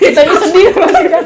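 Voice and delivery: mock emotional laughing, high, loud, fake sadness.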